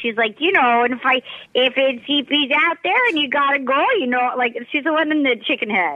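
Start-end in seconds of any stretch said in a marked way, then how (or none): 0.4-4.3 chatty, put-on Midwestern Michigan twang. Imitating a contestant called the chicken lady: imitating a Michigan accent. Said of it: "She's got the Michigan accent".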